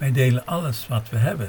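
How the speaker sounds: ordinary delivery, nothing marked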